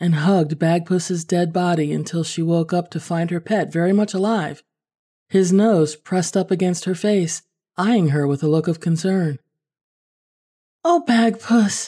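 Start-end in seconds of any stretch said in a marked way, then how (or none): 10.8-11.9 relieved, high outcry. Emily wakes to find her cat Bagpuss alive, crying out. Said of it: "cried Emily".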